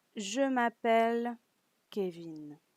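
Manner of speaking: statement-like falling tune, dropping on Kevin. Demonstrating a French answer for learners, with falling answer intonation. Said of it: "It tends to go it tends to go down".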